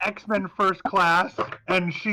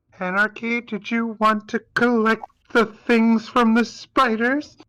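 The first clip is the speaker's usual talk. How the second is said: trembling, unsteady, shaky voice; 3 semitones higher than usual. Voicing Holly asking Anarchy a question, in Holly's shaky voice. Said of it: "says very with a shaky voice".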